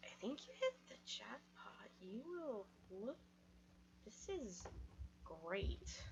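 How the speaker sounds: hushed, whispered aside. Leaning over to Hung Huzi in character at a family gathering: whispering. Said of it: "just whisper".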